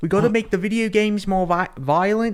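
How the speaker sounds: ridiculous, high, crazy little-guy voice. Retelling a line from Taika Waititi's character in the film: Taika Waititi impression. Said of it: "he talks like a crazy, crazy little guy".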